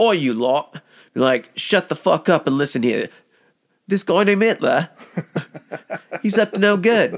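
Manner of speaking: put-on Cockney accent. Showing how one couldn't address a crowd, in a put-on Cockney accent. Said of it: "like a Cockney accent".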